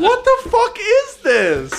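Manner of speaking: high, slow, laughing outburst of disbelief.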